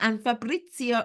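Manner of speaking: terrible put-on Italian accent. Host announcing upcoming guests, saying a guest's name in a terrible Italian accent. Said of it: "I feel I need to try and imitate a, a terrible Italian accent".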